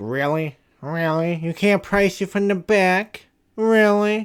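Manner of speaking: put-on high nasal voice. Retelling what an annoyed customer said about pricing lamps: Steve Urkel voice. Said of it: "giving a Steve Urkel voice".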